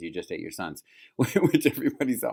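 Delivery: chuckling, laughing through the words. Recounting the plot to another speaker, laughing while talking. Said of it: "I'm laughing because it".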